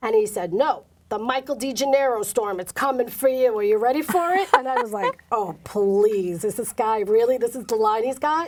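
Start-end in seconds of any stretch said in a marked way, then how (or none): 0.5-4.5 put-on Brooklyn accent, higher pitched. Retelling her best friend's line from their first phone call, imitating Michael DeGennaro's Brooklyn accent. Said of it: "he sounds as Brooklyn as they come".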